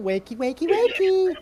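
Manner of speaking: cute mom voice. Asking a fellow performer if the dragon will sound like this, cute mom dragon voice. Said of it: "are you going to be the cute mom dragon?".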